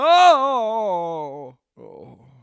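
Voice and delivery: loud, slow, swooping cry, drawn-out "oh". Doing an impression of someone waking from a nightmare: Joe Biden waking from nightmare. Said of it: "Joe Biden waking up in the middle of the night".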